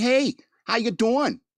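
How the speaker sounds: accent from Long Island. You say it is hard to find chicks who talk like this and demonstrate a Long Island accent. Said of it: "chicks with a Long Island accent".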